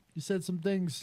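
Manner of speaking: very high-pitched mobster-movie voice. Quoting the famous Goodfellas scene: imitating Robert De Niro in Goodfellas. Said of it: "the famous Billy Bat scene where he's like".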